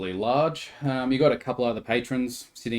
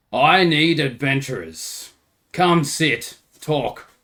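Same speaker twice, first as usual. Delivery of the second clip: very loud, boisterous, booming voice; 3 semitones higher, 7 dB louder than usual. Narrator voices a man seeking adventurers from his table, very loud, boisterous voice. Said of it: "in a very loud, boisterous voice".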